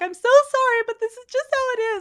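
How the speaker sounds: very high, tearful, trembling, crying voice. Acting out what you would say to your kids, imitating a tearful trembling plea. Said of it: "I would say it with fear and trembling, like crying".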